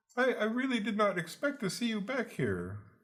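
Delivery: very high, animated, swooping sing-song voice. Narrating to players, the speaker voices a tall half-orc barbarian behind them, high-pitched voice. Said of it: "surprisingly high pitched voice coming from the tall, tall half orc barbarian".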